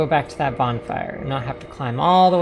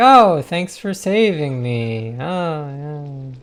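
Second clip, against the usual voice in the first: play-acted, very slow, sarcastic delivery; 4 dB louder than usual. Imitating a game character thanking the player: mock sarcastic thanks. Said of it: "almost sarcastic".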